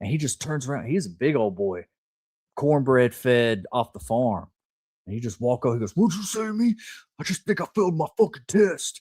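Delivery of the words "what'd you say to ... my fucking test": hostile, confrontational, aggressive, pitched-up comeback. Retelling a big farm boy confronting him on the way to class, imitating an aggressive guy. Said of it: "And he was really aggressive too".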